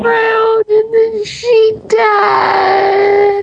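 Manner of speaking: wailing, sobbing voice.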